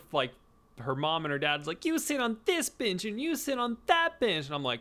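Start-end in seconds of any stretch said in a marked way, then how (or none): 1.9-4.5 put-on shrill, very high small girl yelling. Retelling how a little girl bossed her parents: imitating a little girl yelling. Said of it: "was yelling at all her".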